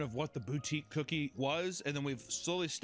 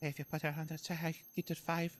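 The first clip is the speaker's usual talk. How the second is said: quiet, confiding, hushed stage whisper. Retelling trying to order four cookies: imitating someone half-whispering. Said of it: "she was, like, whispering".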